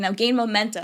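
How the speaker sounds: normal talking voice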